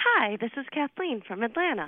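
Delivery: cheerful, happy tone. A caller introducing herself on a call-in show, chipper. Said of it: "you sound chipper".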